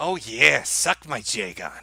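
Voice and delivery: sluggish, very slow, dragged-out meme drawl. Answering a request to say a South Park quote: Coomer voice. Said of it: "Can you say the following South Park quote in the Coomer voice?".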